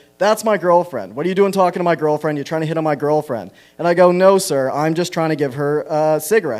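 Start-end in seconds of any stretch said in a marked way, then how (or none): none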